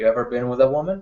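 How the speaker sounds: teasing, toying half-whisper under the breath. Close to a woman's mouth, ask her a question: toying half-whisper. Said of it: "I'll just whisper toyingly".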